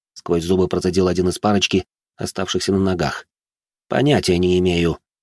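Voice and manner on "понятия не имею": calm and slower. The narrator answers a threatening man who asked if he knows them, calmly. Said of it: "спокойно ответил я".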